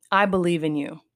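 ordinary talk

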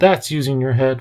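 ordinary delivery

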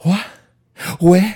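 shrill, breathless, blurted and gasped, high and loud. Doing an impression of Mark Wahlberg asking questions: Mark Wahlberg impression. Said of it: "my best Mark Wahlberg impression".

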